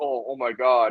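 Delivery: acted-out, mock panicked voice. Performer recalling messing up in practice before a show, retelling own freak-out. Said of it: "freaking out".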